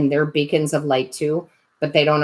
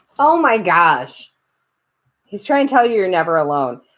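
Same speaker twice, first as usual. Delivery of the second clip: teary, tearful voice, much higher pitched; 3 semitones higher, 4 dB louder than usual. Giving a tarot reading to viewers, teary-eyed. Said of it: "getting all teary-eyed".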